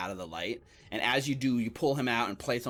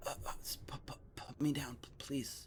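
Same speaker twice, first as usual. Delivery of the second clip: stammering, stuttering, much quieter; 4 semitones higher, 11 dB quieter than usual. Voicing a man being carried in a fireman carry toward town; stammering. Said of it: "he's stammering, he's stuttering".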